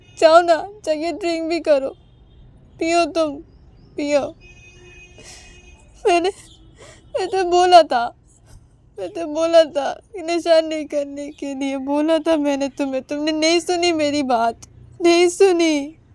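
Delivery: tearful, crying while speaking. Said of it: "उमा की आंखों से आंसू गिर रहे थे".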